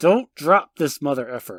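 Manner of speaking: put-on clenched-teeth actor voice. Retelling a movie scene, quoting Bruce Willis through clenched teeth. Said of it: "his teeth together, he goes".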